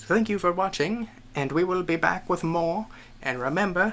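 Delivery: nineteen-forties announcer delivery. Signing off a video, the speaker thanks viewers in a 1940s announcer voice. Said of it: "I'm doing this nineteen forties announcer voice".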